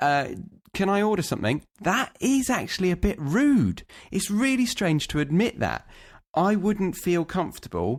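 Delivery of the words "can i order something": courteous, friendly, nice polite tone. Giving an example of asking bar staff for service: in a nice tone. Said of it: "or even in a nice tone".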